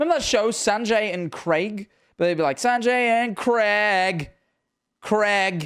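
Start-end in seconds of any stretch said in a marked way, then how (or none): 2.6-5.7 put-on American accent and pronunciation, much slower. Complaining about how Americans pronounce a name, the speaker mimics them in an American accent. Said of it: "It's like how Americans say Craig".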